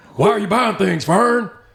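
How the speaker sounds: very high-pitched, very loud holler. Imitating the other speaker talking to Fern: Stone Cold impression. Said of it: "why do I sound like Stone Cold?".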